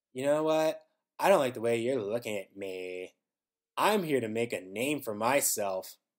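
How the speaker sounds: sassy, attitude-laden but wooden delivery. Retelling how a wrestler answered an interviewer, imitating a sassy voice. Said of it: "sassy kind of voice is just like".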